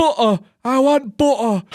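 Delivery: put-on very high, feeble, frail old man voice near death. Retelling a video, acting an old man near death ordering food: imitating a frail old man. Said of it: "almost on death's door".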